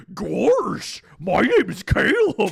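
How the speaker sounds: very loud, booming, slow, drawn-out creature voice. Trying the chupacabra voice again, better: put-on chupacabra voice. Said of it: "I'll do it better".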